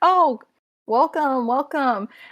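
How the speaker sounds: loud, jovial, called-out voice. A game master voices Barthen greeting two players as they walk in, jovial voice. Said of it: "that kind of jovial voice of uh".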